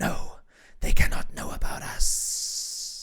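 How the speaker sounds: very slow, drawn-out, mysterious voice. Voicing a mysterious voice in a scene: booming mysterious voice. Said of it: "a mysterious voice booms from the shadows".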